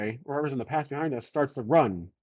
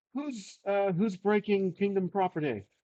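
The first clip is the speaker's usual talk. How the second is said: put-on pitched-up British accent; 6 semitones higher, 3 dB quieter than usual. Describing a scene where a shout is heard, voiced in a British accent. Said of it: "In a British accent".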